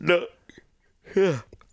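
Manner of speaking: words said through a yawn. Answering during a late podcast conversation, then apologizing for it, yawning. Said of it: "Sorry, I'm yawning".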